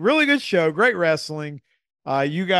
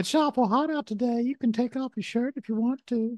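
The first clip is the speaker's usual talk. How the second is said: high-pitched cartoon-style character voice; 8 semitones higher, 5 dB quieter than usual. Doing an impression during a chat: Herbert from Family Guy voice. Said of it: "he's doing, uh, Herbert from Family Guy".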